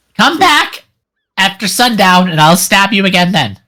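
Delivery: put-on, high-pitched goblin woman voice. A goblin woman on the dock turns to the travelers and answers them; goblin woman voice. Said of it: "this goblin woman turns towards you as you start to walk on the dock and takes this, / this goblin woman turns towards you as you start to walk on the dock and takes this".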